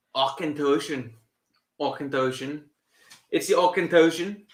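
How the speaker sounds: put-on, attempted Scottish accent, repeated. Saying the name of the drink again, trying it in a Scottish accent. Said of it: "I don't know how to even say it in a Scottish".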